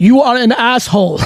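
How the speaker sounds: put-on Russian accent. Joking about how much bigger he'd be with an accent: Ivan Drago accent. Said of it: "if I had an Ivan Drago-like accent".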